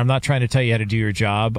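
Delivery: normal talking voice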